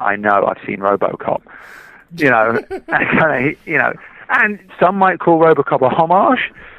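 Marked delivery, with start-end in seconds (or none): 0.0-1.4 dry reply tone. Retelling a director's reply to another director's praise, mock-deadpan James Cameron. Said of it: "Cameron just sort of deadpan went to it".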